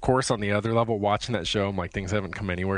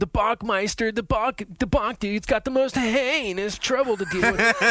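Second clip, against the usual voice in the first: very high, slow, drawn-out surfer-dude voice; 14 semitones higher, 4 dB louder than usual. Describing how a show's hosts talk, imitating the hosts' way of talking. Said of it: "everyone's walking around talking like this".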